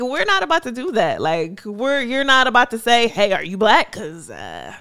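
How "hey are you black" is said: normal talking voice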